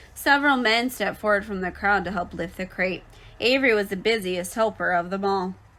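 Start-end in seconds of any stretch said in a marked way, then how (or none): none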